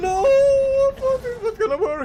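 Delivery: high, slow, anguished crying wail.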